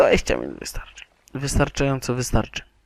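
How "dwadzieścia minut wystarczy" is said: much lower pitch, fast delivery. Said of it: "To co, dwadzieścia minut?".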